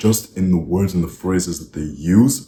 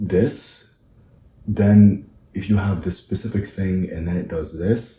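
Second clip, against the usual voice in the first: question-like rising uptalk on final word this. Mimicking people reading off slides, rising question-like ending on 'this'. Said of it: "they would finish every sentence like this".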